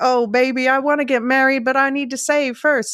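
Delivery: high, attempted Western accent. Describing a movie scene, voicing Sam to his girlfriend; Sam in a Western accent. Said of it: "I can't do the Western accent".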